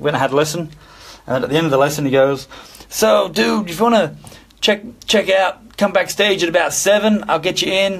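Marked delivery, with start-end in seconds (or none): 2.9-8.0 put-on American accent, much higher pitch. Retelling what a guy said to him at the end of a lesson: American accent. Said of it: "That's my American accent".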